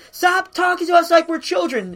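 high, loud put-on shouting. Recounting what a woman in a crowd shouts, imitating someone shouting. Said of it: "one of the things she shouts is".

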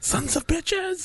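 mock outraged squeal, high, soft and slow.

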